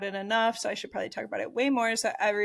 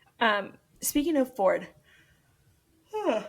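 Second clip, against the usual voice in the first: words spoken through a yawn; 3 semitones higher than usual. Changing topic while unsure why they're tired: yawning. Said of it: "I don't know why I'm yawning".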